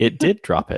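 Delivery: storybook narrator voice-over delivery. Player at the table announcing the attack dropped the enemy, narrator voice. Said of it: "Narrator voice".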